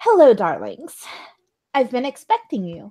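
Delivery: sing-song fifties housewife voice. Voicing a fifties housewife greeting the players at her door: fifties housewife voice. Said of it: "lovely autumnally colored, uh, fifties housewife".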